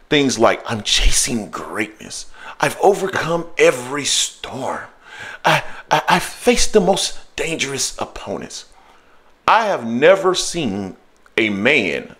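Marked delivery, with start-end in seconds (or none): 9.4-12.0 heavy emphasis on the word man. Explaining why certain sayings irk them: stress on man. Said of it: "I'm emphasizing the word man".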